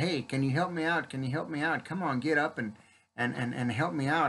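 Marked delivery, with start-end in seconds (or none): none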